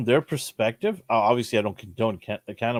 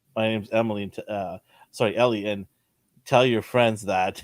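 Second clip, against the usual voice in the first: usual speaking voice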